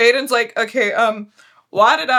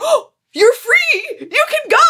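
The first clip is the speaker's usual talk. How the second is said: put-on excited, eager, pitched-up delivery; 13 semitones higher, 4 dB louder than usual. Recapping a mystery game's ending, imitating the Plague Doctor, excited. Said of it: "The Plague Doctor gets all excited".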